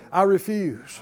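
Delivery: ordinary delivery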